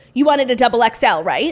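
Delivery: very loud, booming, blurted delivery. Retelling what a man asked the speaker, imitating him saying it loudly. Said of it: "and he said it so loud".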